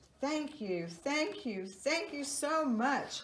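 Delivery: out of breath. Frank the frog waves to the mother bird after their flight, breathless.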